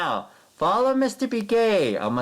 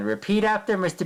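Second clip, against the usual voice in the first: plain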